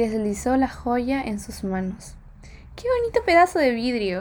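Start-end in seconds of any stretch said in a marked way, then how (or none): 2.8-4.2 put-on little girl's high, swooping, laughing exclamation. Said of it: "exclamó la niña y corrió riendo".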